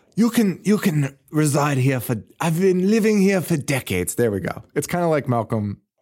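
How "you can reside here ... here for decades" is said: put-on German accent in a much higher pitch. Retelling what a man living in the house said, an Arnold German-accent impression. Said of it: "How do you do a German accent?".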